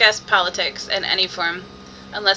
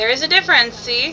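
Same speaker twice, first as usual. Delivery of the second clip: plain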